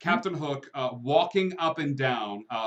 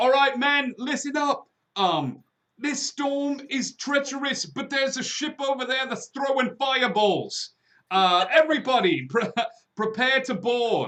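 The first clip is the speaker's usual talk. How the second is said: very high, drawn-out screaming; 12 semitones higher, 4 dB louder than usual. Voicing a ship captain rallying his men to board: screaming out orders. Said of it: "he just starts screaming out orders".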